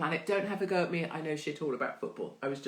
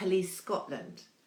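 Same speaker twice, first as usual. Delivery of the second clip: plain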